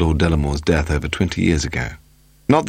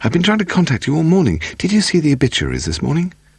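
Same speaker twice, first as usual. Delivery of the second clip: very high, excited, rushed tumble of words; 10 semitones higher than usual. When Paul telephones home, [name] answers him, excited. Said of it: "she said excitedly".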